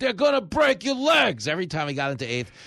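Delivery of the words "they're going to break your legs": put-on very high, shrill, drunken heckling yell. Retelling a drunk heckler in left field: imitating a drunk fan yelling. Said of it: "a drunken left field just yelling".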